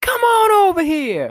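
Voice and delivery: mock, very high, loud hollering call. Retelling how two vendors called out from their tent: imitating someone hollering. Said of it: "they're hollering at me".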